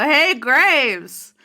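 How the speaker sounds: loud, high-pitched, amplified-sounding shout. Calling out to graves across the desert, very loud shout. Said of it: "make myself be real loud".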